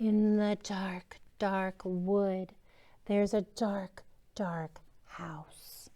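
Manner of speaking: spooky whisper.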